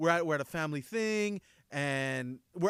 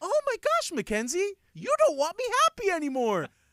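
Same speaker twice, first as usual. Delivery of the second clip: very high, loud, overly happy voice; 7 dB louder than usual. A dad retelling what he says at home, imitating his own really happy voice. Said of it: "I get a really happy voice".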